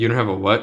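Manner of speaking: plain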